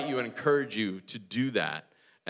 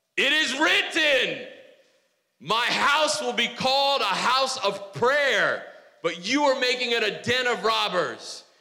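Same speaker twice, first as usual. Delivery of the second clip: loud rousing yell, like rallying troops; 11 semitones higher, 4 dB louder than usual. Act out the man who was making a whip as he starts yelling in a William Wallace voice. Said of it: "in a William Wallace voice from Braveheart, that man starts to yell".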